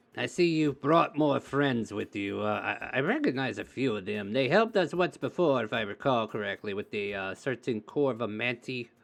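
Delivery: put-on kobold creature voice. Voicing a kobold on a throne welcoming the party back: Snaggle voice. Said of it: "jumps in his chair and says".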